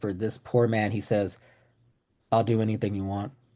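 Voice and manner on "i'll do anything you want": barely above a whisper. Retelling what a pale man said back to the speaker, near-whisper. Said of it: "barely above a whisper".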